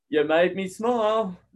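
dry, ironic, sarcastic tone. Recounting what a man said back in reply: retelling a sarcastic remark. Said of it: "being sarcastic".

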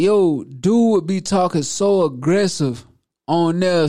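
ordinary talk

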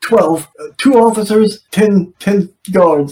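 put-on stutter. Retelling a scene where a threatened man gives up information, imitating stuttering. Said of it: "like stuttering".

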